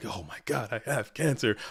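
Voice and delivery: sudden panicked, fearful freak-out. Recounting the doctor ordering tests, retelling own panic. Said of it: "I'm freaking out".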